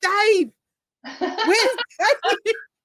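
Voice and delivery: high, loud screamed voice. Recalling a man outside at three in the morning, imitating a man screaming. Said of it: "outside just screaming Dave".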